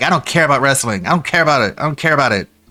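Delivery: mock sneering, scornful, dismissive tone. Mocking how someone dismissed wrestling for years: mocking imitation of someone dismissive. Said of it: "He goes years and years and years being like".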